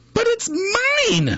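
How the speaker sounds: shrill, very high scream, "mine" stretched out. The bird hears her egg crack and cries out, screaming. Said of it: "screamed the bird".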